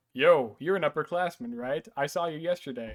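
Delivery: normal talking voice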